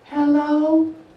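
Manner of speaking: high, squeaky-sounding "hello" pitched way up. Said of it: "When my voice goes up high sometimes".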